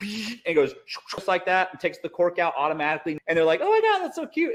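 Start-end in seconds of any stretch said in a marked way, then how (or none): 3.6-4.5 put-on woman's voice. Acting out a woman showing off a gadget: middle schooler's impression of a woman. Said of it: "that's like a middle schooler's impression of a woman".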